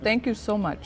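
talking with mouth full. Tasting a dish with a special ingredient, thanking its maker: talking with mouth full. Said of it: "With my mouth full".

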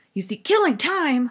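loud, high, furious bellowing roar. The watchdog answers Milo, who said he was just killing time: furious roar. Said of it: "roared the dog, so furiously".

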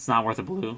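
voice breaks on a word, cracking mid-line. Weighing whether a card is worth using, voice cracking. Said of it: "Voice crack".

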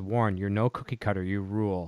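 ordinary talk

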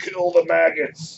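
high-pitched, booming, bellowing war cry scream. Narrating a game scene, voicing Nobby as he goes first, booming screaming voice. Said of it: "this booming voice coming from over here, screaming".

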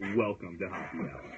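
over-the-top, exaggerated official radio-announcer voice. Doing a welcome line: official radio voice. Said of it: "I want to do my official radio voice".

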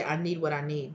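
ordinary talk

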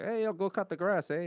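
very high, put-on Canadian dad accent. Imitating a Canadian dad holding a Molson: put-on Canadian accent. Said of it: "I didn't have a Canadian dad holding a Molson and be like".

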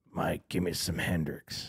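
rough, gravelly, hushed whisper close to the ear. Retelling how he whispered a request to someone mid-performance: imitating a gravelly whisper. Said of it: "he just whispered to him in that gravelly voice".

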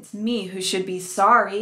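ordinary delivery

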